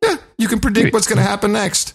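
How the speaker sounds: voice leaps very high in amazement. Saying to another speaker what will happen next: voice went up an octave. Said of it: "your voice went up an octave".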